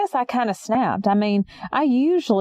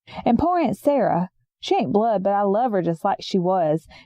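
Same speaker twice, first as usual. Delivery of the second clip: ordinary talk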